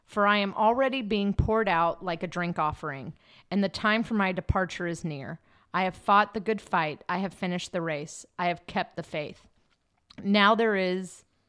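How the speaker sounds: ordinary talk, nothing marked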